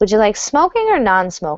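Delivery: non-smoking with downward falling intonation. Showing a learner a two-option question: falling intonation on a question. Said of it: "that's going to have a downward intonation".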